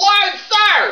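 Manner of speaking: shouted reply. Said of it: "you don't have to yell it".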